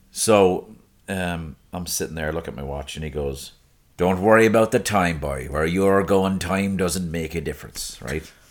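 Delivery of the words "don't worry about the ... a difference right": raised voice, put-on Irish brogue accent. Retelling what a man said while the speaker looked at his watch, in an Irish voice. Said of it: "I love when you do the Irish voice".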